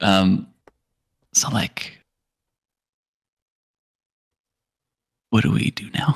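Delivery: whispering as low as possible. Whispering practically in another character's ear, as low as physically possible. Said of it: "I'm whispering as low as I physically can".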